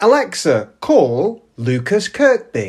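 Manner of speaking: cadence like speaking to a smart speaker. Showing how commands are spoken to a phone assistant: voice-assistant cadence. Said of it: "I do it like that".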